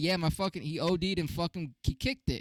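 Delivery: blunt, casual, straightforward delivery. Retelling a coworker's remark about his cousin: imitating someone saying it fast. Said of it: "he said it so fast".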